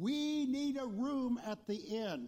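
high, clear, distinct calling voice. Narrating the nativity story, voicing Joseph calling out, in a loud, distinct voice. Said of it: "Joseph called out in a loud, distinct voice".

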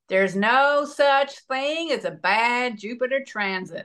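slow, put-on American accent. Quoting what a man said about a jupiter transit: put-on american accent. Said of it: "I'm just going to put on an American accent".

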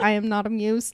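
put-on robot voice. Retelling a story about a guy who talks like a robot: robot voice. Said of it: "Robot voice".

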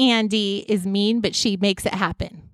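ordinary talk

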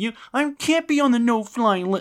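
very high, sobbing, whiny crying voice. Retelling a video of a man: imitating him crying and whining. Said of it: "the guy crying and whining".

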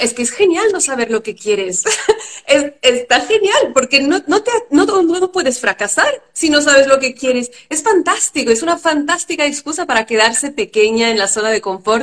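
dry, ironic, sarcastic delivery. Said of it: "Y lo digo con ironía".

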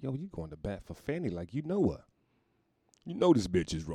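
normal talking voice

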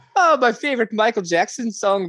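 high, laughing mock Irish accent.

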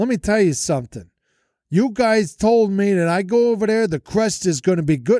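put-on heavy New Jersey Italian accent. Telling two guys what he thought of the place they recommended, thick Jersey Italian accent. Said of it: "I lay on thick with the Italian accent".

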